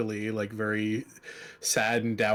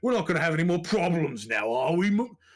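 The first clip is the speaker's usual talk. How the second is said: put-on gleeful, high, gloating yell; 7 semitones higher, 4 dB louder than usual. Retelling how a man yelled down from the top rafter: retelling a yell from above. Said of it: "yells off the top rafter".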